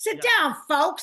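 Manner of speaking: put-on weary old comic manner.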